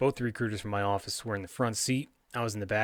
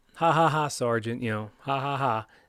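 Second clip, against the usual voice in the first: mock laughing; 3 semitones higher, 4 dB louder than usual. Retelling his reply to his sergeant's suggestion: retelling laughing it off. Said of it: "And I was like".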